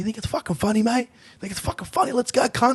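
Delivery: very high, aggressive, belligerent tone. Retelling how a stranger tried to start a fight: imitating an aggressive guy picking a fight. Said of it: "this guy just wanted to punch on".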